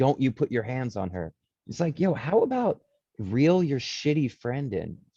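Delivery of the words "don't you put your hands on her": ordinary delivery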